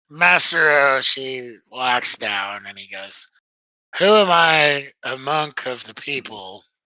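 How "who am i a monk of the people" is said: mocking, sarcastic delivery. Narrating a game scene, quoting a character who walks down: retelling a sarcastic line. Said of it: "He says this sarcastically".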